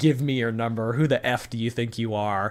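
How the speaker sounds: put-on demanding tone. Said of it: "demanding it".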